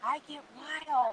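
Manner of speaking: soft, hushed, secretive half-whisper, no voice. Retelling how people got close at the booth: imitating someone half-whispering. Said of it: "Why are you whispering?".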